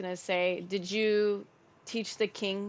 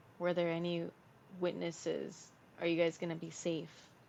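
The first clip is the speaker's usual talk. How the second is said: soft, hushed half-whispered aside in character; 3 semitones lower, 6 dB quieter than usual. Playing a character asking the queen privately about witnesses: half-whispering in character. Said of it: "whisper to the queen".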